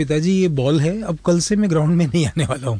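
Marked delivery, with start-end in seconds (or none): none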